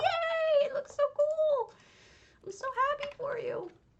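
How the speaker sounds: shrill, very high, delighted screaming cheer. Retelling cheering on viewers whose houses were up: imitating own screaming cheer. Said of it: "screaming from over here in Wisconsin, going".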